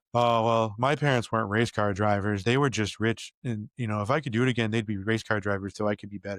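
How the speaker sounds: ordinary talk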